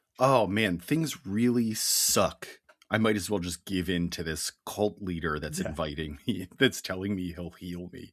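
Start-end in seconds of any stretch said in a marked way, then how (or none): none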